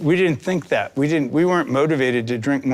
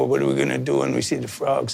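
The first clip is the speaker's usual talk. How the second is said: put-on mobster tough-guy voice. Describing how the first lizard actors sounded, in a Goodfellas mobster voice. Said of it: "And they talked like this".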